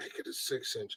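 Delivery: soft, hushed whisper, barely audible. Joking about ordering at Subway, telling her the size: mock whisper. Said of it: "then I whisper to her".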